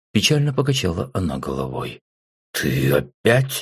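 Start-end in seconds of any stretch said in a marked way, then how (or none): 2.6-3.7 grumbling, much lower pitch. The narrator answers a woman's teasing remark, grumbling. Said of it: "проворчал я".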